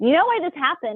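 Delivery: riled-up, angry, demanding, very high-pitched. Retelling what she said while flipping through a book: retelling own angry words. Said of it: "I'm all angry because I'm like".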